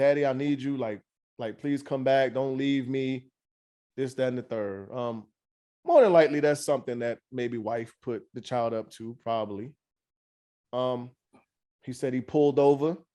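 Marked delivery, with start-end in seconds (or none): 0.0-3.3 put-on crying, tearful pleading voice. Retelling a son's phone call begging his father to return: imitating a crying son. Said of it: "his son called and was crying, like".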